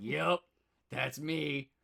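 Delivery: rough, creaky, sleazy beer-and-cigarette guy voice. Describing a film's American translation, the speaker imitates its king of cats: imitating a beer-and-cigarette dude. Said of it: "some dude with a cigarette and a beer".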